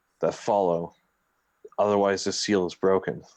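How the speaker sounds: quiet low voice. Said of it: "speak in a low tone".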